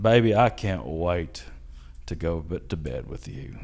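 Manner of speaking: heavy, thick Southern drawl, laid on thick, low and slow. Speaker reenacts a bedtime line said to her, thick southern accent. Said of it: "my southern accent gets a lot thicker".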